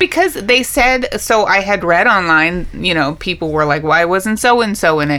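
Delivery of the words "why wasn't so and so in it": ordinary talk, nothing marked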